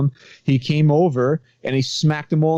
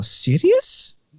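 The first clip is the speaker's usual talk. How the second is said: put-on Egyptian accent, higher; 9 semitones higher than usual. Retelling how a pizzeria owner answered: imitating an Egyptian accent. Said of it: "Pretty good Egyptian accent".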